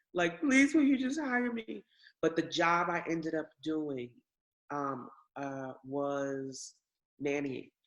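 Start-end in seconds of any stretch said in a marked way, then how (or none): 0.4-1.9 very high, tearful, sobbing, crying voice. Retelling begging a temp agency for a job: retelling own crying plea. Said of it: "And I was crying".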